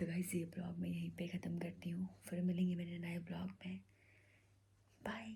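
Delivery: speaking softly. Signing off her vlog while the others are asleep, speaking softly. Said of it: "इसीलिए मैं धीरे बोल रही हूँ।".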